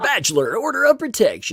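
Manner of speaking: very high, swooping, animated sportscaster voice. Reading the other person's written headline aloud, in a sports announcer voice. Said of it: "I'm going to read it like in my sports voice".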